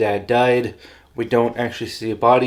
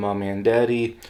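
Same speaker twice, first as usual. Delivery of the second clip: normal talking voice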